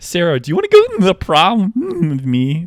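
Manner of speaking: high, very loud, breaking, cracking voice. Imitating a guy whose voice keeps cracking: imitating a cracking voice. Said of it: "his voice keeps cracking".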